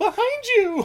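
shrill, very high-pitched, loud yell. Retelling how somebody warns the sheriff: imitating a scream. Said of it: "somebody screams out".

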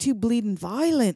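put-on Australian-sounding accent. Retelling a remark about an english punk band, in an australian accent. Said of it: "why does that sound Australian?".

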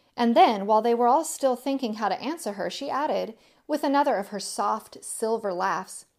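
ordinary delivery

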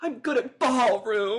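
put-on excited, eager tone. Imitating a dancer who sounds excited saying the line: imitating Susan Lucci sounding excited. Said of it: "She's just like".

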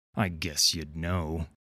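low, slow, sneering delivery. Reading a story, he answers Miss Fortune's remark: sneering. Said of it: "he sneered".

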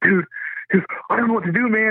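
very high, frantic, freaked-out babble. Retelling what the panicking cornerman said between rounds: imitating someone freaking out. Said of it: "Why was he flipping out?".

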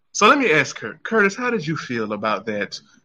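put-on woman voice.

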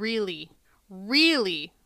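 emphasis on the second "really". Quoting a talking head about a computer that protects the family: stress on second really. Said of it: "lots of emphasis on that second really".

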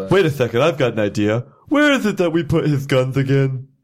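put-on cartoon lion character voice. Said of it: "you sound like Snagglepuss whenever you're talking from now".

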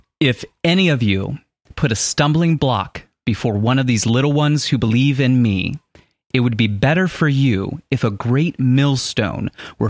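ordinary talk

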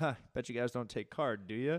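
mock teasing, joking tone. Retelling a moment buying cookies without cash, imitating themself teasing. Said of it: "I said it jokingly".

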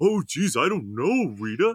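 slow, dopey, dim-witted cartoon voice. Describing a doll brought to life, quoting him in a dim-witted cartoon psychic voice. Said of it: "he sounds like a dim-witted cartoon psychic".

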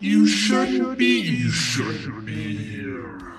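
skeletal undead dragon voice. Voicing a two-headed skeletal dragon speaking in the party's heads: skeletal dragon voice. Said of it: "you hear two voices".

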